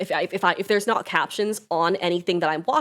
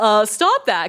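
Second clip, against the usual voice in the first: loud, snapped-out yell; 3 semitones higher, 7 dB louder than usual. Speaker recounting how they snap at their cat for staring into a corner: retelling a snapping yell. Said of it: "I just snap at them and yell".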